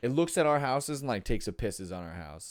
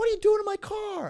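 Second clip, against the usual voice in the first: mock shrill, very high, loud, angry yell; 6 dB louder than usual. Retelling a stranger yelling about her car: imitating a woman screaming. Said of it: "this lady who's screaming at me".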